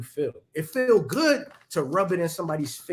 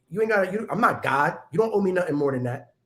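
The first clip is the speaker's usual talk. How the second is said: ordinary delivery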